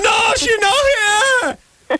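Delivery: very high, slow, screeching wail.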